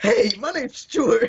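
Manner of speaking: high, slow, squeaky talking-rat voice. Imagining a rat on your chest that talks: talking rat voice. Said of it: "he was speaking like".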